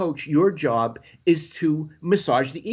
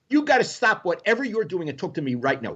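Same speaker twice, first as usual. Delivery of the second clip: put-on angry, demanding tone. Retelling how an angry Jerry called out to Ira: imitating angry Jerry.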